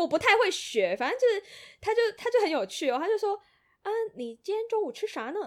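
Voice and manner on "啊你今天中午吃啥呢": put-on thick Beijing accent, much higher. Speaker recounts a funny man's question: thick Beijing accent. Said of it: "就是很浓的北京腔".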